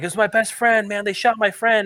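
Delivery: put-on distraught man voice. Retelling what a man whose friend was shot said: imitating someone upset. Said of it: "And he's so upset".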